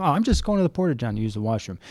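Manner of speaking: ordinary delivery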